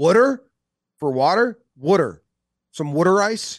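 mock Philadelphia accent. Mocking how philly people say words, imitating a philly accent. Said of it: "That sounds like a dumpster talking".

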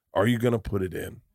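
ordinary delivery

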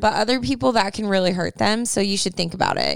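normal talking voice

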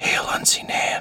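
breathy whisper in character voice. Voicing a guard who lets a player in: whispering in character. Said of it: "she just leans down and whispers in your ear".

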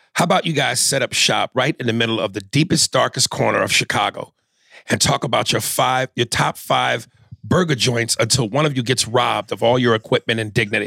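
ordinary talk

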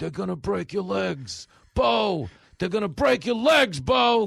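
put-on very loud, sloppy, drunken yell. Retelling a drunk heckler in left field: imitating a drunk fan yelling. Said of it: "a drunken left field just yelling".

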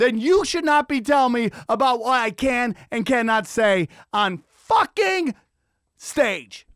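worked-up, fed-up, high-pitched, heated rant. Ranting about what people can say on stage: yelling. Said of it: "I'm sorry I was yelling".

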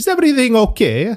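put-on very high, thick Neapolitan Italian accent. Retelling what John Luca asked him, imitating John Luca's Italian accent. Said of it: "I'll do his accent".

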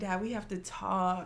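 slow, nervous, freaked-out, panicked pleading. Retelling the moment of telling a parent big news: imitating own panicked voice. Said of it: "freaking out".

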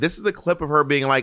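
ordinary talk

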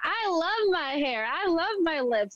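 high, proud full-lung scream. Retelling how a student ended up yelling it in class: imitating a girl screaming. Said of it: "she's screaming".

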